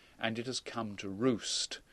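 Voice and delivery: normal talking voice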